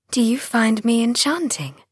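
playful, teasing voice, pitched lightly up. Narrator reads the first-person narrator's question to Alistair, teasing. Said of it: "I said teasingly".

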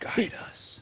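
soft, close, leaned-in whisper in a character voice. Playing a character who leans down to someone: whispering in character. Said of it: "I lean down and I whisper".

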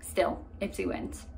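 soft, hushed, secretive whisper.

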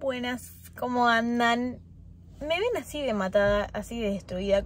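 groggy, slow, sleepy, freshly woken voice. Greeting viewers at the start of a vlog, just woken up: sleepy voice. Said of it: "con voz de dormida".

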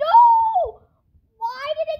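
shrill, very loud yell, no stretched long. Reacting suddenly mid-conversation during a game, yelling. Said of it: "I literally thought you were yelling like that".

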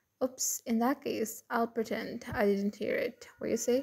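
plain

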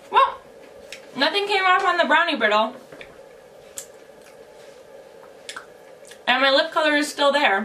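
chewing while talking, mouth full. Trying lip color while eating brownie brittle, talking while chewing. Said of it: "I'm talking while I'm chewing".

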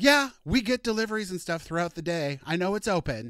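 put-on icy, cold, rude tone. Retelling how a bartender answered a customer about the open door: imitating a cold, rude reply. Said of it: "But just very cold and rude".

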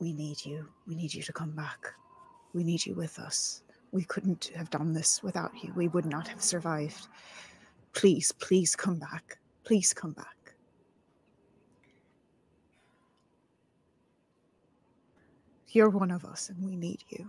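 whispering. Kneeling beside a fallen companion in character, whispering: whisper. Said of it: "and I whisper to Steve".

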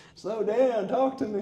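put-on very high holler, as if across a distance. Retelling how great-grandpa called to great-grandma: imitating a man hollering from afar. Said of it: "a strange man hollering at him from afar".

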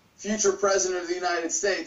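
usual speaking voice

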